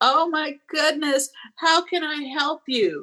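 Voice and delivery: mock very high, gushing, excited shriek. Retelling seeing the local school's textile class: imitating own excited screaming. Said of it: "I just started screaming".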